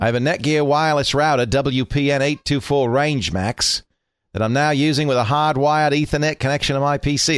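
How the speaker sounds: terrible fake Australian accent. A host reads out a listener's question from Melbourne in a terrible Australian accent. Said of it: "That's a terrible accent".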